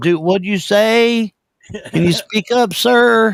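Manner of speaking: slow, high, stretched-out country drawl. The speaker imagines taking a prank call, playing himself as a country talker: slow country drawl. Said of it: "I talk really slow".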